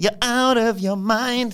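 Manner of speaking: very high, auto-tuned pop voice. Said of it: "it's just like a [name]".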